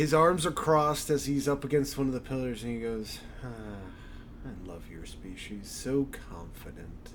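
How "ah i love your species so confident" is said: low, slow, demonic, menacing voice. Narrating a scene, voicing the figure who speaks to you: demonic voice. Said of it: "a sinister voice".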